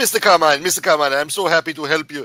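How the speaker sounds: put-on very loud, high Indian accent. Retelling a Dell support call, mimicking the helper in an Indian accent. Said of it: "with the Indian accent".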